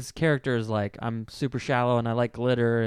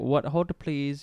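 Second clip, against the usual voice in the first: bad, overdone, horrible put-on Indian accent; 3 semitones higher than usual. Retelling a movie's tech-service call scene, horrible indian accent. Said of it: "like the horrible accent".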